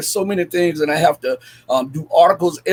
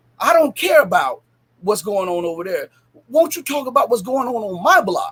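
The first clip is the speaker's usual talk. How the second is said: acted-out irritated, near-angry, annoyed tone; 4 semitones higher than usual. Retelling what a man said to the speaker, in an almost angry voice. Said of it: "in almost an angry voice".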